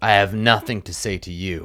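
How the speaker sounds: scornful, contemptuous, sneering voice. Voicing a captive asked whether he speaks common: sneering. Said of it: "he sneers".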